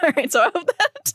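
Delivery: words broken up by laughing. Presenting this week's show, the speaker is laughing at a gag: laughing while talking. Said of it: "I don't think you should be laughing right now".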